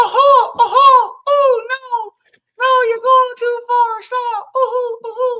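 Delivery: voice jumps very high into a cartoonish squeak. Speaker retells how a man's voice got high; imitating a high-pitched voice. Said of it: "He start his voice get high".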